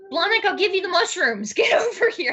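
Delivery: very high, all-out, top-of-the-lungs yelling. Calling out in character for the quickling to come: yelling at the top of his voice. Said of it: "I'm just yelling at the top of my voice".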